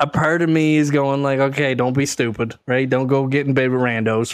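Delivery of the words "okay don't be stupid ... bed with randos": ordinary delivery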